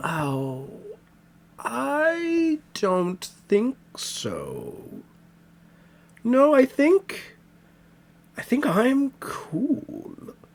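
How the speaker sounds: very high, slow, drawn-out, swooping dismissive voice. Voicing a mysterious voice that refuses to help a character: mysterious voice character, dismissive. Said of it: "And the voice says".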